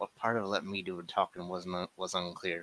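soft muttering, mumbled under the breath. [name] comes up behind Toby, smacks his back, and mumbles: mumbling.

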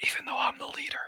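whisper under the breath. Playing a character, adding an aside to the group: whisper under breath. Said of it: "and then I whisper under my breath".

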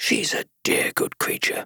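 softly to himself. Narrator reads a man repeating a remark: softly to himself. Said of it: "he repeated softly to himself".

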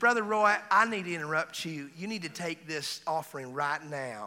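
put-on Southern belle voice. Retelling a woman from Georgia interrupting him at a meeting, imitating a Southern belle. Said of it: "She's like a Southern belle".

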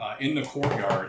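ordinary delivery

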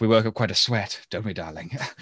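quiet, suggestive sitcom-character voice. Describing a Frasier scene, the speaker acts out Niles's line: quiet Niles impression. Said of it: "The way he says that".

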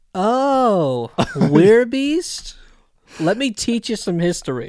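smug sing-song sarcasm, oh drawn out. Speaker quotes an animated character's line, with mock smug sarcasm. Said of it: "just this shit-eating sarcasm".

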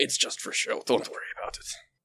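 very quiet whisper, close to the ear. Handing the first mate the quill, in character: whispering in their ear. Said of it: "whisper in your ear".

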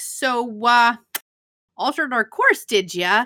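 mock disappointed dad voice, slow. Retelling a scene where Kirk questions Spock: Kirk as disappointed dad. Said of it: "very disappointed".

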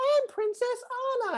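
put-on squeaky child voice. Retelling a little girl answering who she is: squeaky little 3-year-old voice. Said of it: "that like squeaky little 3-year-old voice".

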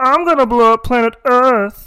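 very high-pitched, cartoonish voice. Asked for an impression, the speaker does a Marvin the Martian voice. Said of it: "do Marvin the Martian".

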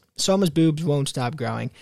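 ordinary delivery

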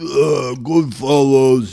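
loud, slow, mock Italian-American tough-guy voice.

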